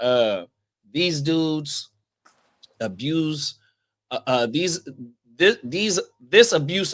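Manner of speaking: stumbling, restarting stammer over repeated words. Reacting to a story that sounds like a movie, stuttering. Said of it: "Excuse me for stuttering".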